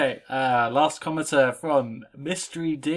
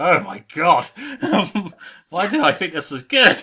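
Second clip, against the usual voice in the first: loud, laughing, cringing groan of embarrassment. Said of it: "I was like".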